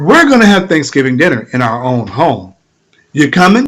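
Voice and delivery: mock calm, steady, sure and confident delivery. Retelling a declaration repeated while others offered help: retelling a steady, confident declaration. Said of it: "I'm still steadily saying".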